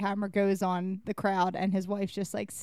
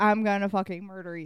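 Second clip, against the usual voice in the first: ordinary delivery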